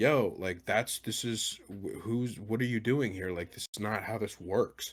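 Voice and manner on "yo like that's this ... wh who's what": usual speaking voice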